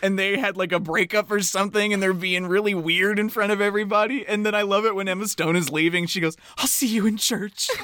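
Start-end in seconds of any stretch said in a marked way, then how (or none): 6.6-7.7 acted tearful voice. Retelling a scene as Emma Stone leaves, imitating Emma Stone's tearful line.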